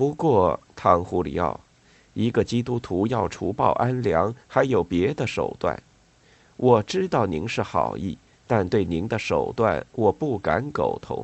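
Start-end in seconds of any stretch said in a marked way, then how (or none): none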